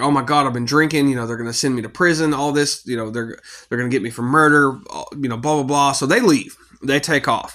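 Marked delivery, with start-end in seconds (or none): none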